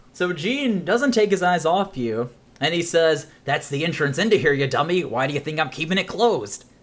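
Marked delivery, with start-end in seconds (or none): 3.4-6.6 rude, insulting, hostile character voice. Voicing a character who won't look away from the player: hostile NPC voice. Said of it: "hostile, are we?".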